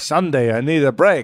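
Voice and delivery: put-on comic voice with a Yiddish-inflected accent.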